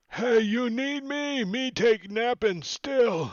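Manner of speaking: squeaky, very high, loud broken-English ogre voice. Voicing an ogre who crawls around the corner: ogre voice. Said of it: "Ogre nineteen's, crawls around the corner and says".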